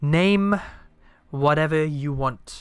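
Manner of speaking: loud bellowing voice. Voicing an unseen voice that speaks to Malva, in a bellowing voice. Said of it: "a voice bellows".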